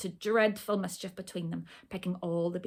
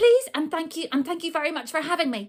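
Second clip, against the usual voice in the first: very fast, rushed rattle, pitched up; 9 semitones higher, 9 dB louder than usual. Narrator reads the little sister's words to Harry's mother: very quickly. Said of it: "she said very quickly".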